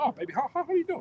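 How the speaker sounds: scornful put-on voice, stumbling and stammering.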